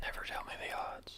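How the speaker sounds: quiet breathy whisper.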